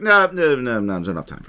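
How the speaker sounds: put-on, fast, self-possessed, lordly aristocratic disdain. Retelling how a character brushes off Ka's hypnosis, with mock aristocratic disdain. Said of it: "absolute self-possessed aristocratic disdain".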